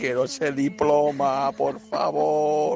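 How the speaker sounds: slow, high, creaky owl voice.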